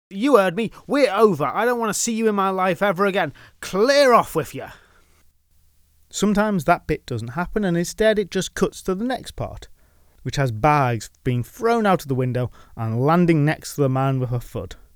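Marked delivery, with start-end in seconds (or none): 0.1-4.6 furious, high, dismissive angry shout. Acting out a woman at a window shouting at a man: acting out a woman shouting. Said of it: "a woman leans out the window and shouts at him".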